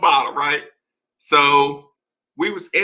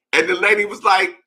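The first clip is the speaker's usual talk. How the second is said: normal talking voice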